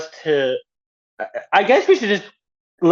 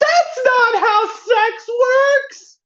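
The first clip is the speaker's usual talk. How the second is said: acted-out, very high, shrieking scream. Retelling what a man's ex-fiancée screamed at the tv: retelling a scream. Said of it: "just screams out".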